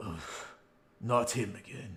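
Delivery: grudging, quiet grumble mumbled under the breath. Game master voicing Jack as he recognizes a returning player, mumbling under his breath. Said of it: "hear him mumble under his breath".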